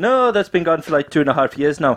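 put-on Indian accent. Retelling a phone call, quoting the woman who answered; Indian accent. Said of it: "Don't know what that accent".

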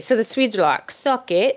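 badly done, fake put-on British accent. Speaker caps a point about the eight-hour workday in a bad fake British accent. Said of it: "That's a British accent".

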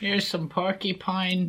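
put-on high-pitched elderly doctor voice. Playing a doctor character, in an old-man doctor voice. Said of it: "Sounds like an 80-year-old [name]".

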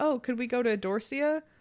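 slow, shy, hesitant, acted-out voice. Retelling a movie scene, a woman asking for a restaurant: imitating someone speaking shyly. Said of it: "she kinda goes shyly".

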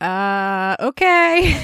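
the word okay said awkwardly and uneasily.

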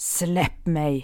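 hissed between clenched, gritted teeth. Narrator reads her own reply to a man whose breath reeks of alcohol, hissed through clenched teeth. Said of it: "väser jag genom sammanbitna tänder".

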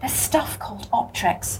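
spoken quietly. Bridie speaks to Dan O'Ryan, who is having trouble with his eyes, quietly. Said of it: "Bridie said quietly to Dan O'Ryan".

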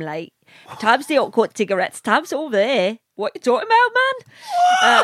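Geordie accent, high and sing-song. On a podcast, co-hosts urge the speaker to show off a Newcastle accent. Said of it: "I can talk like Newcastle".

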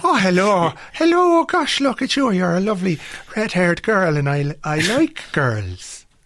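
bad, fake put-on Irish accent. Imitating the Irish guy in a film, in a bad Irish accent. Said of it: "has got a bad Irish accent".

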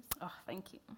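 tearful voice, talking through tears. Thanking another speaker for a compliment on the poems, crying while talking. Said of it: "Sorry, I cry a lot".

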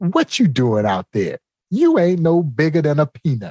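mock condescending, belittling jeer with swooping pitch. Retelling a ballplayer taunting a pitcher: imitating a condescending remark. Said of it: "he says in a very condescending fashion".

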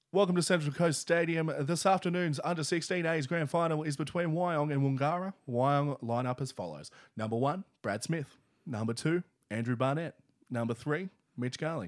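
sports ground PA announcer. Asked for a taste of the announcer voice, introducing players: stadium announcer voice. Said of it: "Now give me some players coming onto the field".

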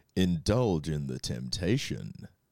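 grumbly, very low late-night commercial voiceover. Taking turns voicing a chocolate ad line for the others to judge, very low voice. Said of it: "Too low?".

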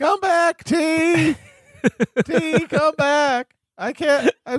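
very high, squeaky put-on voice. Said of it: "I'm sounding like a squeaky voice".

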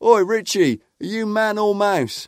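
jeering, high heckling shout. At football, speaker retells shouting out to Richie near the tunnel: retelling own shout. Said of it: "And I shouted out to him".

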